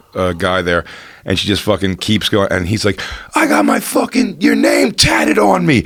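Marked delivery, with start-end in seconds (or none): 3.3-5.8 mock very high, drawn-out screaming rant. Retelling a video of a man catching a cheating girlfriend: imitating a man screaming. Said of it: "the guy's just screaming at her".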